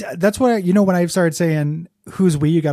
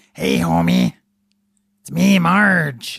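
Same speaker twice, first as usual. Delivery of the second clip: slow, drawn-out character voice swooping up and down. Joking about cosplaying at a Simpsons trivia night: Marge Simpson voice. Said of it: "I'm in a real Marge mode".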